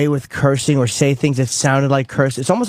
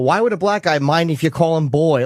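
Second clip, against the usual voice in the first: ordinary talk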